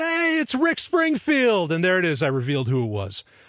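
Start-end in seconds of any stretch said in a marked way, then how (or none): 0.0-1.7 mock screamed shout, very high-pitched. Retelling what he screamed out at a concert: imitating someone screaming. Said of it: "he screamed out".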